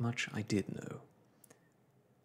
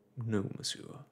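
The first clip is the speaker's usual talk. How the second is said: ordinary delivery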